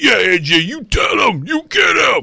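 very high, shrill, shouted dumb voice. Summing up a lot of the reaction to the Tannehill tweet, in a dumb Twitter voice. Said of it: "I'm trying to do, like, dumb Twitter voice".

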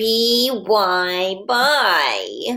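whiny, complaining voice, words spelled out. Leading boys and girls in spelling practice, the speaker uses a whiny voice. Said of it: "saying this word in our whiny voice".

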